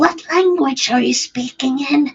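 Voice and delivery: hushed, curious half-whisper. Speaking in character to a muttering figure, not to disturb: half-whispering. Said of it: "she will whisper to".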